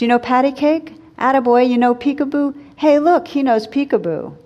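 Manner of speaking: loud, high-pitched hollering call. Reading a story where an old man calls across a restaurant: shouting from across the room. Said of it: "the old bum was shouting from across the room".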